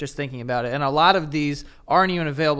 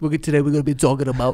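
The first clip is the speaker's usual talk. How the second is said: mocking put-on Queens accent; 4 dB louder than usual. Mocking how they sounded in an old video, imitating own old Queens accent. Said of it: "I sound so Queens in this video".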